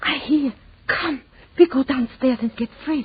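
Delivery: hushed, whispered speech. Hearing a noise in the kitchen, a woman speaks to her companion; whispering. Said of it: "What are you whispering for?".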